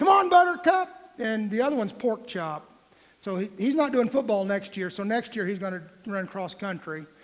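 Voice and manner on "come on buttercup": loud high yelling. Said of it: "I used to yell at".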